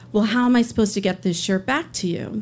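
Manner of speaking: normal talking voice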